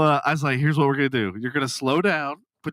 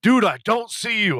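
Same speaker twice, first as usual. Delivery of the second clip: irritated, pissed-off, high-pitched griping tone; 7 semitones higher, 3 dB louder than usual. Retelling a driver's complaint while searching for the speaker: imitating a pissed-off friend. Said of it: "getting pissed off 'cause he's like".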